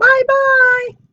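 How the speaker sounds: very high, loud, squeaky little voice. Reading a children's story, a snow bear calls goodbye to her: high, squeaky voice. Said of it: "a high, squeaky voice calling to her".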